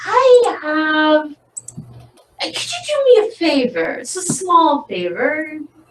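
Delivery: slow, swooping, hesitant, uncomfortable, awkward speech. A storyteller voices a sister asking for a favor: awkward. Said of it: "getting all awkward now".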